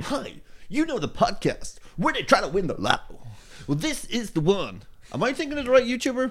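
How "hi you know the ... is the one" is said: odd, big radio-DJ-style announcer voice, soft. Imagining a YouTuber narrating a video about the podcast: weird big Vsauce voice. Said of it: "weird big voice".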